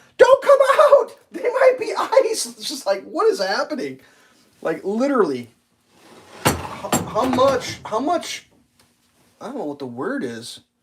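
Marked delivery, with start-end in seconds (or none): 0.2-2.5 shrill, very high-pitched screaming woman's voice. Picturing a woman at a tire shop warning customers: imitating a woman screaming. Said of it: "a woman that's gonna show up screaming".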